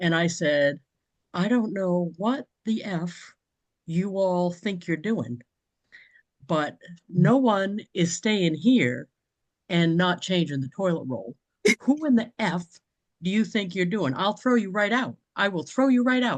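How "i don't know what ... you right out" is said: put-on stern, serious, no-nonsense tone. Retelling scolding guests over an empty toilet roll: retelling a serious scolding. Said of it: "I got real serious in the face".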